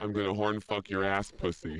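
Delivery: put-on demonic devil voice. Playing Satan on a phone sex call: Satan voice. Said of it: "phone sex with Satan".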